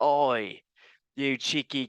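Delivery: stock Australian accent, laid on. The speaker piles on Australian stereotypes: mock Australian accent. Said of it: "Can I do any more Australian uh, stereotypes?".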